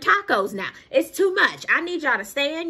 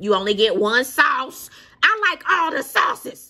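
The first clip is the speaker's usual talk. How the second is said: put-on loud, raised ranting voice; 3 dB louder than usual. Talking about Popeyes' attitude, in a raised voice. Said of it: "I'm so sorry that I'm raising my voice".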